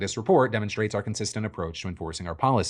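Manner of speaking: ordinary delivery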